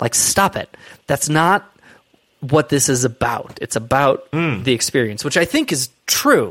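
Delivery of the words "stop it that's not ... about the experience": ordinary delivery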